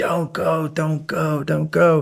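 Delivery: high, stretched-out put-on scream. Retelling another guy's warning to stop driving: imitating someone screaming. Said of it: "this other guy comes screaming".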